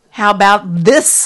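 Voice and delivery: loud, slow, shaking, angry defiance. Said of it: "I said, shaking now".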